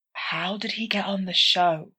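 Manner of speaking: soft, hushed whisper under the breath. Narrator reads an aside as a baker walks away: whispering.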